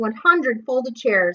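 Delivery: ordinary delivery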